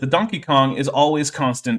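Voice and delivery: ordinary delivery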